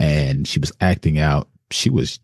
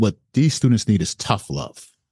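heavy stress on tough. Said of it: "Emphasis on the tough".

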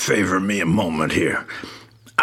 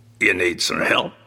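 usual speaking voice

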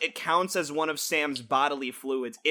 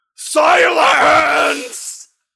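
put-on wizard voice yelling, higher and louder; 12 semitones higher, 13 dB louder than usual. Describing a scene from the fourth movie, the speaker does an imitation of Dumbledore's yell. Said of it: "I really hope I can do justice to this sound".

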